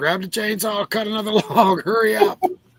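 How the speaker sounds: mock screaming. Retelling being pinned by a tree, imitating someone screaming. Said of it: "I'm screaming at him".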